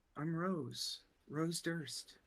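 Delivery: put-on very slow, high-pitched little girl voice. Voicing a girl behind a door answering a knock: little girl voice. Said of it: "it sounds like a, a little girl".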